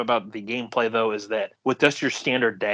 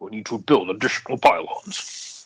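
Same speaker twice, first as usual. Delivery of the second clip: low, smooth and cool deep voice. Talking about a quote heard in YouTube poops, the speaker imitates its deep, cool voice. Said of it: "such a deep, cool voice".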